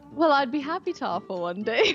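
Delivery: put-on English accent. Answering a request to offer an English accent: put-on English accent. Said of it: "do you have an English accent that you can offer us".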